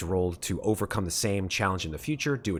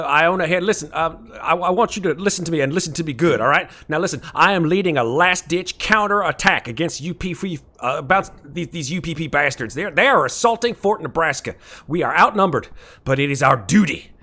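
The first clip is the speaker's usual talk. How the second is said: loud, raised voice with slight gravel; 8 semitones higher, 9 dB louder than usual. Voicing Iona, the game master orders a last-ditch counter attack: gravelly Iona voice. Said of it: "little graveliness in his voice".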